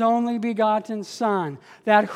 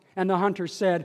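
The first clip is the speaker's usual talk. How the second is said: ordinary talk, nothing marked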